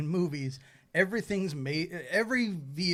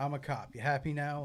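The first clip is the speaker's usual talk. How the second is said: mock sarcastic tone, quieter; 4 dB quieter than usual. Imitating how a character admits being a cop: imitating a sarcastic admission. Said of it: "I'm saying it like I'm not".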